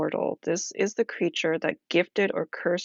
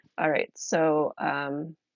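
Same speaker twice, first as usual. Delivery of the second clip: ordinary delivery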